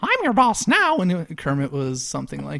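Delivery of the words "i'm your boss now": very high, little cartoon mouse voice. Retelling a sketch where Disney bought the Muppets: Mickey Mouse voice. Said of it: "Mickey Mouse being like".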